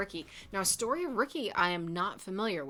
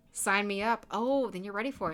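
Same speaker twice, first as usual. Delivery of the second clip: ordinary talk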